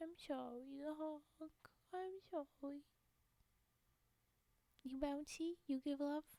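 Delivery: speaking through tears. Apologizing to viewers on stream and asking for love, crying while talking. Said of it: "then I stop crying".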